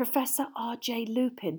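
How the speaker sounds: hushed whisper. Asked who the man is, she answers at once, whispered. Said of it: "whispered Hermione at once".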